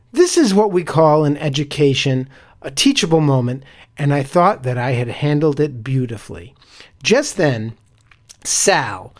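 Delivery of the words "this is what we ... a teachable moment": ordinary talk, nothing marked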